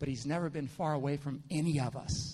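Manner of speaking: whispered. Retelling how Paul speaks to the listeners: Paul whispering. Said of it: "Paul kind of whispers to him".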